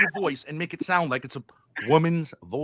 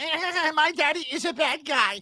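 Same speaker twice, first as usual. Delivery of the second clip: very high, very slow, taunting mocking drawl; 11 semitones higher than usual. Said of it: "I don't auto-tune my voice and try to sound like".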